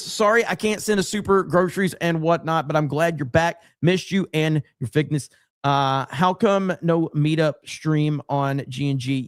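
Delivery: ordinary talk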